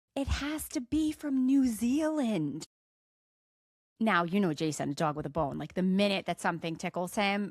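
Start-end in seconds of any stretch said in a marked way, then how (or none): 0.1-2.6 shrill, high, dragged-out, stretched-out screaming voice. Speaker retells a woman driving and insisting about a wine; retelling her scream. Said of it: "she was screaming".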